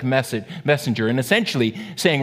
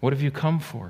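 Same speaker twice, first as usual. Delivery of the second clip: kindly, compassionate, sympathetic tone; 6 dB quieter than usual. A preacher voices God asking Elijah why he came, compassionate. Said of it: "His voice is compassionate".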